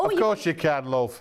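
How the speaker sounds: friendly, easy Yorkshire voice. Answering a request for a mirror, in a Yorkshire accent. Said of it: "Sorry, I'm talking like this".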